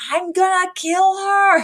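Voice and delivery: very high, shrieked scream. Retelling a scene where a character screams off screen, imitating a scream. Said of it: "we hear her scream".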